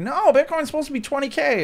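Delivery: high, loud, freaked-out, panicked blurt.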